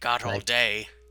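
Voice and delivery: put-on old dwarf woman character voice. Voicing an old dwarf woman inviting the party in: voicing an old dwarf woman. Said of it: "is a dwarf woman".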